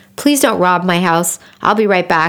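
plain

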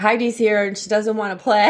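ordinary talk

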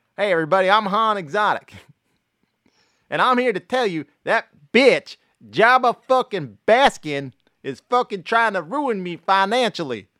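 very high, very loud, belted persona voice. Doing a Star Wars movie as Joe Exotic: Joe Exotic as Han Solo. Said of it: "I'll do the whole movie as Joe Exotic".

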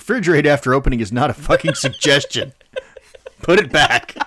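loud, cranky, grumpy dad voice. Acting out dad sayings one now repeats, imitating a grumpy dad. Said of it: "I hear my dad".

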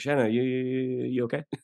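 put-on mumbled Australian accent, drawn-out you. Retelling how the director checked on him, imitating a mumbly australian director. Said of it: "Australian guy who had a very kind of mumbly quality".

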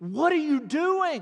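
put-on toned-down yell, high and mild. Telling a story, imitating young ladies running out of a store screaming. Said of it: "they scream".

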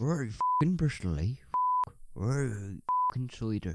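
put-on Bristol accent. Host talking about a winning listener from Bristol, in a mock Bristol accent. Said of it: "Bristol accent".

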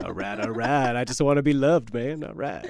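put-on laid-back drawl. Joking about a face made of celebrity features: Matthew McConaughey voice. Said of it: "Got Matthew McConaughey's voice".

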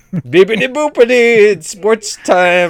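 goofy cartoon ghost voice, high and loud. Making a sports-channel intro noise for the audience, cartoon ghost-like voice. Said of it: "You remind me of the ghost from Big Mouth".

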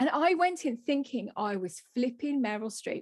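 ordinary delivery

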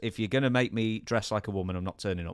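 plain

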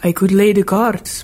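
plain

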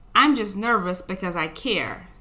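usual speaking voice

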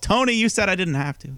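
put-on shrill, very high-pitched yelling. Retelling how Britt Baker yells at Tony Khan: imitating Britt Baker yelling. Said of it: "And Baker just yells".

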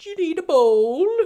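ridiculous, silly, shrill, loud voice. Speaker retells how his wife talks to him, in the ridiculous Cotton voice. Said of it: "In the same ridiculous Cotton voice".

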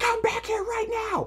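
very high, shrieking scream. Retelling a woman screaming at him as he leaves, retelling her screaming. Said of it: "she's screaming at me".

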